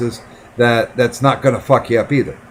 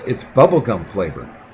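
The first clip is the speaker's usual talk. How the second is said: put-on dry, matter-of-fact deadpan delivery; 3 semitones lower than usual. Retelling what the man said while bringing the syringe, mimicking a deadpan delivery. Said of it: "almost completely deadpan and goes".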